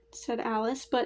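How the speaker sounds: ordinary delivery, nothing marked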